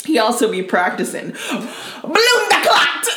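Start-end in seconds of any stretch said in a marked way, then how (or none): 1.3-3.1 fake Jamaican accent, pitched slightly higher. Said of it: "Or whatever he said".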